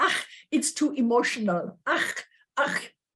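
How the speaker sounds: put-on German accent on the word "ach". Quoting what she used to say to her, in a German accent. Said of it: "she said it in a German accent".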